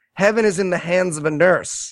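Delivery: ordinary delivery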